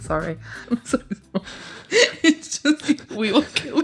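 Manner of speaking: laughing while talking. Apologising to another speaker while fighting the giggles: laughing while talking. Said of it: "I've got the giggles".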